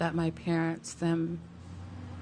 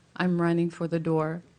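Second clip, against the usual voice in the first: normal talking voice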